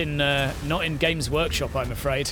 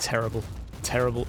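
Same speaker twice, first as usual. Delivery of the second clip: ordinary delivery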